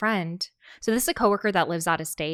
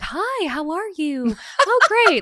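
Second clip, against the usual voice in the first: very high, loud, very slow, polite voice; 11 semitones higher, 6 dB louder than usual. Speaker shows the voice everyone uses at a drive-through: McDonald's ordering voice. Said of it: "like my McDonald's ordering voice".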